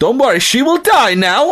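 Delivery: very high, shrill put-on Eastern European accent. Retelling a line someone said during a wrestling match, in a Borat impression. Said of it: "Don Callis did a Borat impression".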